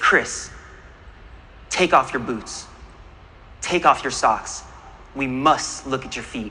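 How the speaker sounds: forever calm, very low tone. Retelling what his Sherpa said during the ice climb, imitating Dawa's calm voice. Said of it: "in his forever calm voice".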